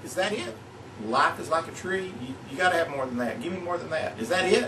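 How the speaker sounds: plain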